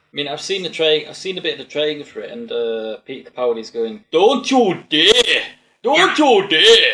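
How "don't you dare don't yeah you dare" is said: very loud, clumsy put-on Scottish accent. Tell others about Pete in the training, doing a really bad take on Pete's Scottish accent. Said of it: "my really bad take on his accent".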